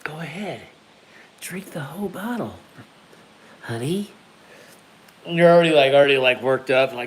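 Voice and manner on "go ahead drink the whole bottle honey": very quiet, menacing, hushed evil voice. Joking about Bradley's wife, speaker imitates her in a quiet evil voice. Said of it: "Evil voice is like all quiet".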